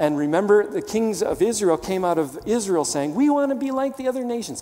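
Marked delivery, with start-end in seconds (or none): 3.1-4.6 high, whining, complaining tone. Quoting Israel's demand to be like other nations: mock-whiny, complaining. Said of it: "Get the whiny tone in my voice".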